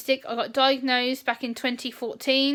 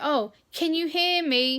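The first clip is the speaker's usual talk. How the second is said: put-on patronising, talking-down tone; 3 semitones higher than usual. Imitating someone who asks if the speaker can hear: patronising tone. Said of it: "it's so patronising and undermining".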